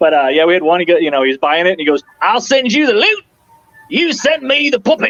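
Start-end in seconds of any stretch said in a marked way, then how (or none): 2.2-5.1 put-on Australian accent with voice pitched way up. Retelling what an Australian buyer said about the puppet, in an Australian accent. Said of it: "I got to do my Australian accent".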